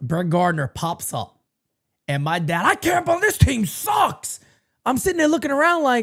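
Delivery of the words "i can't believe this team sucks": put-on scream, higher. Retelling how a dad reacted to a pop-up: imitating dad screaming. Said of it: "He's screaming".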